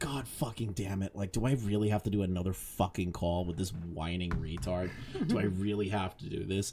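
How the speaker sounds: put-on worn-out, exhausted, fed-up, put-upon griping. Retelling how an exhausted Himpleton felt about more calls: imitating Himpleton exhausted. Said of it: "Himpleton looks exhausted. He's like".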